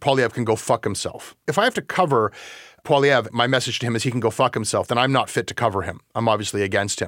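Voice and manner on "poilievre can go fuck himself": usual speaking voice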